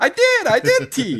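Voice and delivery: very high, thin cartoon bird voice. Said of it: "talking to Tweety".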